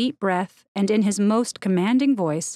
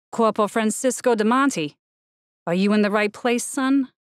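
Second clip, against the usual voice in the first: firm, commanding voice with a menacing undertone. Narrator voicing a corporal confronting someone who came toward him, in a commanding, menacing voice. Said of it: "in his most commanding voice, / in his most commanding voice, / I'm supposed to give a speech in this room, / in his most commanding voice".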